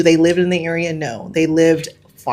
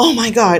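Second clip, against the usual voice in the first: mock breathless panting, higher pitch; 5 semitones higher than usual. Retelling how a woman reacted to a broken counter: imitating someone panting. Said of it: "panting and she goes".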